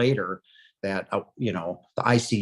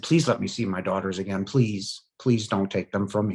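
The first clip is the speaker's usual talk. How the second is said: sobbing, shaking, tearful voice. Recounting what the speaker begged back then, retelling a sobbing, shaking plea. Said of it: "shaking uncontrollably, sobbing".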